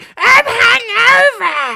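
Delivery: put-on shrill, very high, loud screaming wail. Telling a story about a hungover flatmate, imitating someone screaming. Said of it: "start screaming".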